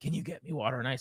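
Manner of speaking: very quiet, barely audible, groggy, half-asleep voice. Retelling what she asked while half asleep, imitating her groggy voice. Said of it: "half asleep, groggy voice".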